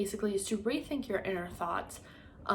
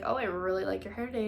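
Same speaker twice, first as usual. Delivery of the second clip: normal talking voice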